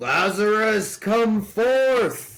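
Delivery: loud, very high, full cry. Reading aloud a passage in which Jesus calls to Lazarus: loud cry. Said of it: "he cried with a loud, loud voice".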